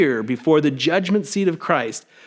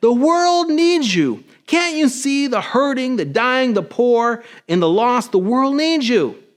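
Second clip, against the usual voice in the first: mock upset, pitched-up pleading outburst; 6 semitones higher than usual. Retelling shaking a fist at God and saying: retelling an upset outburst at God. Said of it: "I got really upset with God and I shook my fist at him".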